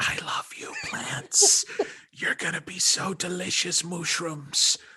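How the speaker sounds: loud, carrying stage whisper. Describing how he whispers affection to the plants, imitate him: loud stage whisper. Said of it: "it's like a really loud stage whisper".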